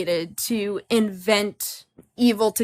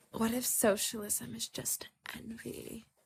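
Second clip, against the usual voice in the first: soft, hushed whisper with audible awe.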